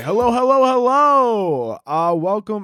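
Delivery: slow, drawn-out radio DJ voice. Speaker greets listeners, then remarks on it; radio host voice. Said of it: "I sound like a fucking radio host".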